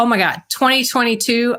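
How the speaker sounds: plain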